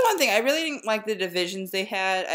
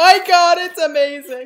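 overwhelmed, very high, very loud shrill cry near tears; 10 semitones higher, 11 dB louder than usual. Opening an anti-aircraft shell water bottle, near tears. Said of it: "I'm gonna start crying".

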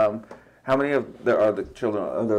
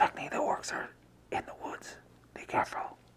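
real whisper, very hushed, barely voiced. A tabletop player sends a spell message to an ally, in a real whisper. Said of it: "so it's just a real whisper".

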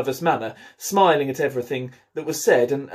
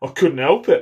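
sulky voice; 3 dB louder than usual. One of the painters, scolded for splashing, replies in a sulky voice. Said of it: "said Five in a sulky voice".

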